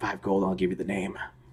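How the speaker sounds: very quiet, hushed, close half-whisper. A game master voices a character half-whispering an offer in a player's ear: half-whispering. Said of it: "he whispers in the ear".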